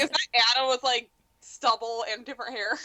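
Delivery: ordinary talk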